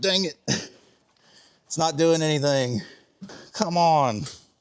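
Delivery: breathless, puffing between words, winded. You are trying to get it going on the ramp and are already out of breath. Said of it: "I'm already out of breath".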